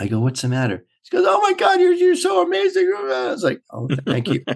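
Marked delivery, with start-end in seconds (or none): 1.3-2.9 mock teary crying voice, very high pitched. Retelling a makeup artist coming in after a rehearsal; imitating someone crying. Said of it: "She's crying".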